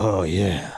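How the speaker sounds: raspy, rough, throaty smoker's voice. Imitating a male porn star in a scene: porn star's raspy smoker's voice. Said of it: "They always have that raspy smoker's cough voice".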